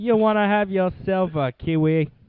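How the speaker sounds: slow, put-on English accent. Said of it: "Said that like you're from, uh, England".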